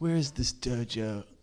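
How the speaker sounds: put-on Californian accent. Riffing on the word stoked with others, asking in a put-on California voice. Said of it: "California voice in my mind".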